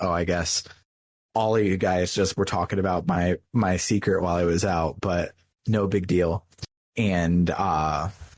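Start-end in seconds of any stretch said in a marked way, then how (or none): none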